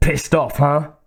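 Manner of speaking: spoken through gritted, clenched teeth. Reading a character's line after dodging a creature's fire, through gritted teeth. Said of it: "said through gritted teeth".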